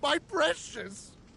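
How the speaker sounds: crying voice. Forced to research on a deserted island, he cries out over his invention, crying. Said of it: "Why is he crying?".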